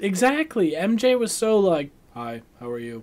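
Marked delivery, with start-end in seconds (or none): 2.1-3.0 dull, even, uninflected soft monotone. Discussing an actress's flat roles, imitating MJ in a flat monotone. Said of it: "her roles have been very monotone".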